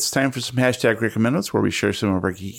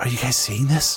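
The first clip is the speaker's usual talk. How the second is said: whispered speech. Voicing a camper spotting something in the dark: whispering. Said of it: "Harcourt whispers".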